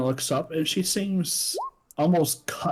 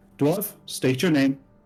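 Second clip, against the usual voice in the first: stern authoritative tone. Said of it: "she just simply steps up and goes".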